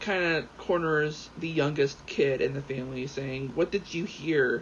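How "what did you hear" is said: ordinary talk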